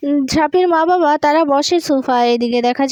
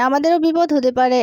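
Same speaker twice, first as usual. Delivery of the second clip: ordinary delivery, nothing marked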